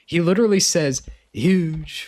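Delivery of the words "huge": put-on "huge" punched, New York accent. Imitating how someone says a word: Trump accent. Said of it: "kind of a Trump accent".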